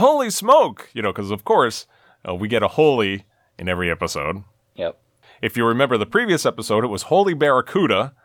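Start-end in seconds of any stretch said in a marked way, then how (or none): 0.0-0.9 very high, shrill, high-pitched yell. Recapping a Batman episode, retelling Robin's yell. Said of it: "Robin yells".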